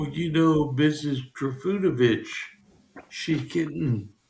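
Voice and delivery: hushed, gossipy half-whisper. Retelling what the ladies at the cafe bar say: imitating a half-whisper. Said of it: "they whisper".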